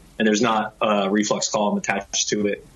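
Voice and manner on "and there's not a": usual speaking voice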